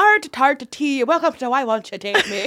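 put-on Irish accent. Joking about touring Dublin, trying out a put-on Irish accent. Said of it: "try out my Irish accent".

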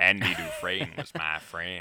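slow movie voice with each word drawn out. Quoting a film line after an impression sounded like Morgan Freeman: Morgan Freeman voice. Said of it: "that sounded more like Morgan Freeman".

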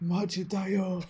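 put-on, extra deep, dropped voice. Retelling how a character says one word: imitating a very deep voice. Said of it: "in, like, the deepest voice".

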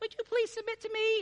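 put-on very high, polite pleading voice. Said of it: "that's just the voice I've got".

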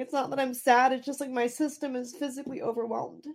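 teary crying voice, talking through tears. Answering a question in conversation, crying while talking. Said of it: "I don't even know why I'm crying".

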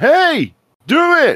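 play-acted, very high, loud excited burst. Act out how he responded to you about a Kickscammer video, an impression of someone really excited. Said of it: "And he's like really excited".

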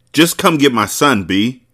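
rushed, pressing pleading tone. Narrator reads a man on the phone telling the listener to come get his son, urgent. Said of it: "he said urgently".

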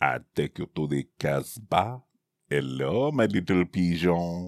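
laid-on, cartoonish French accent. Guessing what a described man's voice sounds like, Pepe Le Pew voice. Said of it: "that is Pepe Le Pew".

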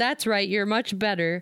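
ordinary talk

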